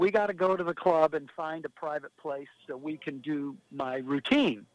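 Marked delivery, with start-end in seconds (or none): none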